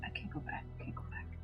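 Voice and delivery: hushed, very quiet whisper under the breath. Voicing a character who repeats a line to himself: whispering to himself. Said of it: "whispering to himself".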